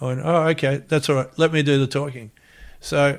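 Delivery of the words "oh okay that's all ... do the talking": plain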